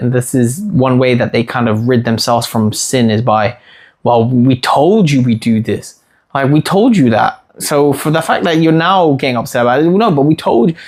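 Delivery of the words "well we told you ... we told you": usual speaking voice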